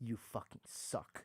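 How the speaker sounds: barely voiced, close, low, very quiet whisper. Retelling an old man who came on stage: imitating a whisper. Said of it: "whispered in my ear".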